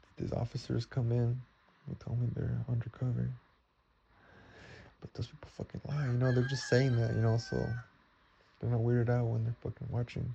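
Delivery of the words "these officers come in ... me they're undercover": ordinary talk, nothing marked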